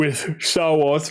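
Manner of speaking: speaking through a yawn. Recording at night, later than usual, speaking through a yawn. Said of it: "I don't know why I'm yawning".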